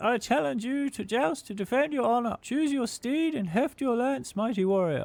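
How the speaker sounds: very high, ringing, piercing shrill cry. Reading a game challenge to joust aloud: shrill voice. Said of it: "A shrill voice rings out".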